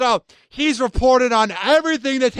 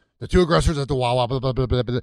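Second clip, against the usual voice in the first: very low, rushed, lifeless, passionless news-style read; 11 semitones lower than usual. Mocking a reporter rushing through a report on an arrest, imitating fast passionless reporting. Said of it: "he's talking so fast".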